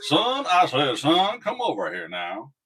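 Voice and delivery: loud, slow, swooping, sing-song cartoon voice. Trying to recall a cartoon line, the speaker does a Foghorn Leghorn voice. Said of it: "one of Foghorn Leghorn's lines".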